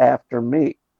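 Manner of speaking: normal talking voice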